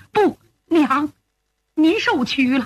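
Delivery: plain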